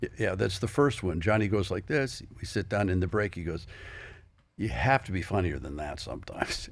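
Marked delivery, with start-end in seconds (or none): 4.6-6.7 funny, jokey delivery with a comic twist. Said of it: "he said it real funny".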